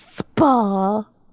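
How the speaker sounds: mocking pronunciation. Planning a getaway with girlfriends, saying one word in a mocking pronunciation. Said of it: "Why did you pronounce it like that? ... you're mocking it".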